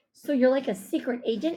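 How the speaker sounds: plain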